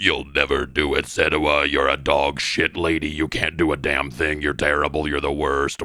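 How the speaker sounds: very low, deep, contemptuous, belittling fatherly voice. Retelling the game's cruel father voice: imitating the father's voice. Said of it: "this voice comes on and he says".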